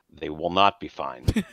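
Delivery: low, ominous, foreboding storyteller narrator voice. Game runner answers a player who says they'll be fine, in narrator voice. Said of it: "Narrator voice".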